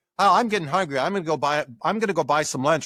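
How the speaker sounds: ordinary delivery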